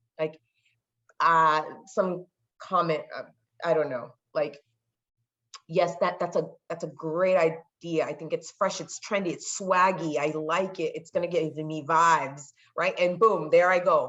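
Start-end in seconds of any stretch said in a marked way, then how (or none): none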